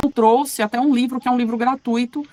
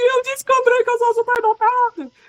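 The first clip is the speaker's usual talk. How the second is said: mock very high, weepy, tearful crying voice; 12 semitones higher than usual. Recalling coming home to her husband and daughter, retelling her own crying words. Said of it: "Cheguei chorando, falando assim".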